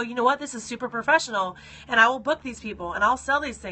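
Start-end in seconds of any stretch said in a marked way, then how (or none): none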